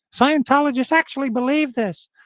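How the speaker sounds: put-on full-on American accent, pitched very high. Quoting a TV show while telling a story, in a South Park American voice. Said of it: "Your American voice".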